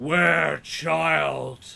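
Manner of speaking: loud roaring creature scream. Voicing a creature that emerges from the water: creature screaming out. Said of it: "it roars, and it screams out".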